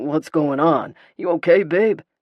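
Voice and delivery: loud growling male voice. Narrator reads Lucas stepping in beside her, asking if she's okay: growling male voice. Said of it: "a growling male voice intercedes".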